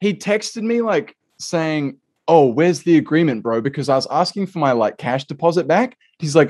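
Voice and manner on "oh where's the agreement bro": fast, all-out sarcastic tone. Speaker retells a man's reply about the agreement, mock-sarcastic. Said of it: "Like being all sarcastic".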